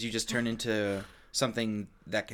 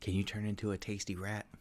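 playfully creepy delivery, quieter; 3 semitones lower, 12 dB quieter than usual. Asking another player about turning into a rat: mock creepy tone. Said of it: "I don't like the way you said that".

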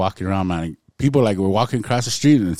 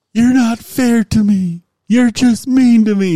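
very high, slow, loud, drawn-out scream; 8 dB louder than usual. Retelling what a man in a wheelchair kept screaming, imitating a man screaming. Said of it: "he was screaming, he's like".

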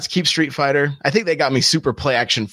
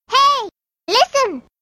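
very high-pitched put-on calling voice. After a question about the Legend of Zelda series, a high-pitched put-on voice cuts in. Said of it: "this high pitched voice".

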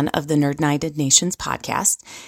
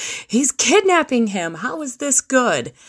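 mock child calling out, high-pitched yell; 9 semitones higher than usual. Recounting how she yelled out during a film scene, retelling her yell. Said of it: "she yells out".

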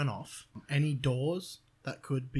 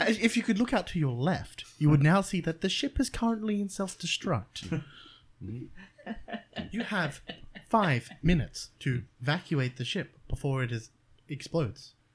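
pleasant, friendly tour-guide voice; 4 semitones higher, 4 dB louder than usual. Voicing an old transport vessel's ship announcement, in a nice tour voice. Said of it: "it's actually like a nice tour voice".

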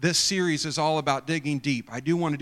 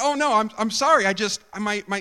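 play-acted stammering, pitched much higher; 7 semitones higher, 5 dB louder than usual. Retelling how they answered a woman who asked for a ride, retelling own stammering. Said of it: "now I'm, like, stammering".

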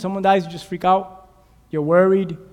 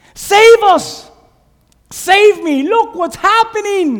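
very high, raised yelling cry; 12 semitones higher, 8 dB louder than usual. Speaker acting out dying people crying out to the Lord, retelling a yell for rescue. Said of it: "And we're yelling".

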